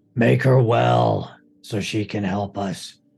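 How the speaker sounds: guttural, low creature voice pushed from the throat. Voicing Krynos as he hands her over to Lou and Eustace: guttural Krynos voice. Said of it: "his guttural Krynos voice".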